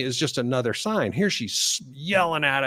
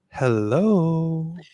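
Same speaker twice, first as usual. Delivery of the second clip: sudden telephone manner with a drawn-out hello; 4 semitones higher than usual. Retelling how she answered the phone right after yelling at us, imitating her phone voice. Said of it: "Phone voice".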